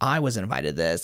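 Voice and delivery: play-acted, low, sulky, put-out pissy grumble. Retelling a roommate who wasn't invited, mock-pissy complaint. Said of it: "she's kind of pissy about it".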